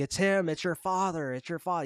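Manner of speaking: insistent, high, urgent yelling, called out. Recapping a scene where a character yells over engine noise, retelling a yell. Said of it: "Bob's yelling at Lara like".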